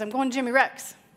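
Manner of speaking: fast put-on four-year-old child lisp. Retelling what Nick said when asked why he was crossing: imitating Nick's fast lisp. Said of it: "he said this real fast and with a 4-year-old lisp".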